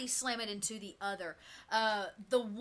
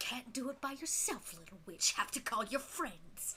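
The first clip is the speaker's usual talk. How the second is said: hissed, raspy, judgmental, taunting voice; 6 dB quieter than usual. Game master voicing a masked woman speaking to the witch: raspy, judgmental hiss. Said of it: "You hear her kind of raspy, judgmental voice hiss out".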